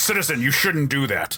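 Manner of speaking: officious, stern, authoritarian guard-like tone. Retelling how a comic's guard warns a kid: imitating an authoritarian warning. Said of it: "warning him in this very authoritarian kind of way".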